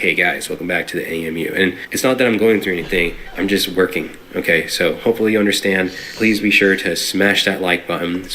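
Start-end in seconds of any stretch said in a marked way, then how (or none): 0.0-1.5 mock fatigued low-energy delivery, lower and quieter. Contrasting high-energy commentary with tired videos: imitating own tired, low-energy intro. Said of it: "And then sometimes you're like".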